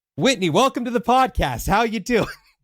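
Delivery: put-on very high, perked-up on-air host voice. Podcast host mimics how her voice changes once she hits record; mimicking own perked-up voice. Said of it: "my voice perked up a little bit".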